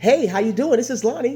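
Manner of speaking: very high telephone voice. Showing how he answers every call at his job, in a high-pitched phone voice. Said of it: "you get that high pitched voice".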